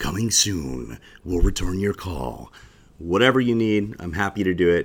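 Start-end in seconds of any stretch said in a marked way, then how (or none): 0.0-2.5 big-screen coming-attractions voice. Offering to record an answering machine message: movie theater trailer voice. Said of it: "I can do the movie theater voice".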